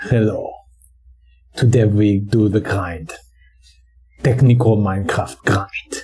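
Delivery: put-on thick, heavy German accent. Mocking a German Minecraft YouTuber's video intro, in a thick German accent. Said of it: "His accent is so thick".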